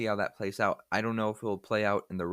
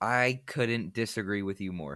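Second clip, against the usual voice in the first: ordinary delivery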